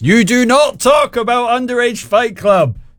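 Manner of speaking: slow, very high-pitched put-on Scottish accent. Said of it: "famously Scottish in the film".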